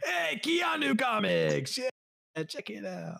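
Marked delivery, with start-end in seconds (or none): 0.0-1.9 high-pitched, rough alien voice. Speaker says they'll talk like Watto for the rest of the episode; Watto voice. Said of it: "me talking like Watto".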